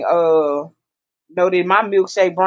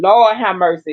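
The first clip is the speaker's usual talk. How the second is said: ordinary talk, nothing marked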